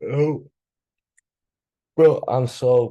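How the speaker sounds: words stretched slowly through a very slow yawn. Mid-explanation, the speaker breaks off, yawning while talking. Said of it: "I'm yawning all the time".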